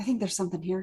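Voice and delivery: hushed, theatrical stage whisper. Warning the party in character that something is near: saying it very quietly. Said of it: "I'm just gonna very quietly say".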